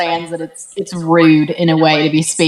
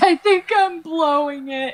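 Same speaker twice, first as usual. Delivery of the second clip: very high, sorrowful little lament; 11 semitones higher than usual. Narrating a scene, the speaker voices a character's message in a very sad voice. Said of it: "in a very sad voice".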